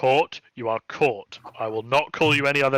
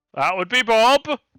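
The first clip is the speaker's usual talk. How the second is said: strangely loud, unusually high call; 9 semitones higher, 6 dB louder than usual. Narrating a scene, a character turns toward the doorway: unusually loud voice. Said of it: "says in a rather unusually loud voice".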